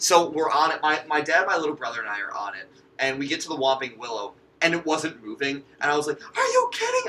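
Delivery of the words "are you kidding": shrill, very high, disbelieving yell. Retelling a ride where the tree didn't move: retelling own yell. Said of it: "literally yelling this on the ride".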